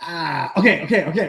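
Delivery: nervous, jittery voice. Recounting offering a free shot before a fight, imitating Garbs, jittery. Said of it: "he's like a bit jittery".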